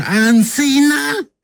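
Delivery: put-on high, drawn-out, childlike calling-out voice.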